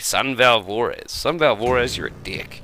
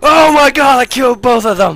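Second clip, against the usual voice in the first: shrieking, very high, very loud excited yell; 14 semitones higher, 11 dB louder than usual. Player reacting to killing both of them in a game, yelling excitedly. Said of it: "Sorry for yelling".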